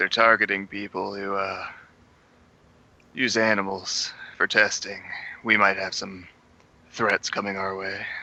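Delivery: hushed-tone aside, spoken quietly. Speaking in character to another character in a game: hushed tone. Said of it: "just kinda in a hushed tone say".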